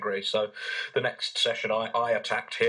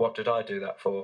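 gentle, soft-spoken tone. Retelling a therapist's reply after being choked: imitating a very soft voice. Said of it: "It's a very soft voice".

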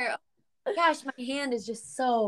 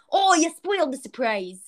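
high-pitched, cartoonish character voice; 5 semitones higher, 4 dB louder than usual. Retelling how Zach used to go around saying it: imitating Zach. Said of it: "Zach literally used to go around going".

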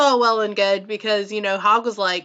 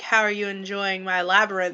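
mock-sexy character voice, lower pitch; 2 semitones lower, 5 dB quieter than usual. Retelling a movie scene where Jareth speaks to Sarah, imitating Jareth's sexy voice. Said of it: "he does it in a very sexy way".

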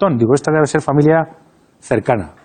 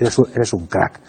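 low male voice, said more quietly; 7 semitones lower, 4 dB quieter than usual. Speaker retells what a man said to him after condolences, retelling a man's low voice. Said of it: "Todo esto en voz baja".

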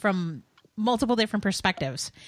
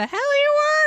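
piercing, shrill, very high screaming yell; 7 dB louder than usual. Retelling what someone screamed from the other room: retelling a scream. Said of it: "Chris just screamed".

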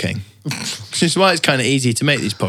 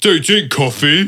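put-on petulant, bratty little child voice; 4 semitones higher, 4 dB louder than usual. Retelling what Barclay said in the studio, imitating Barclay as a bratty child. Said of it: "Like a bratty child".

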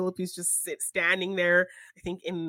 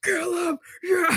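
very high, frenzied, savage cheering; 11 semitones higher, 5 dB louder than usual. Retelling cheering at a movie with a friend: imitating whisper screaming. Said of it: "whisper screaming the whole time".

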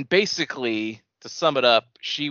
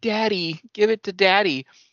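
put-on very high, haunting, drawn-out ghost-child voice; 9 semitones higher than usual. Retelling a game scene, quoting what a ghost says: imitating a ghostly kid. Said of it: "a ghostly kid say something like".

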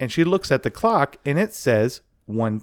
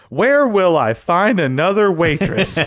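high, thick, heavy, theatrical sarcasm; 5 semitones higher, 4 dB louder than usual. Retelling an actor's line after a woman quits, mock-sarcastic. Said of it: "in his most sarcastic tone as an actor".

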